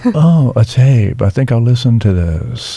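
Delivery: put-on Memphis accent. Describing how a man used to talk, imitating Alex's Memphis accent. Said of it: "that Memphis accent".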